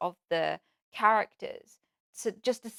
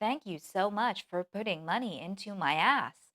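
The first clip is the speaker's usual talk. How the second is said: automated robotic soundboard voice with jerky, uneven speed. Showing a deliberately artificial soundboard voice: imitating an automated readout voice. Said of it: "some sort of auto readout where you're like".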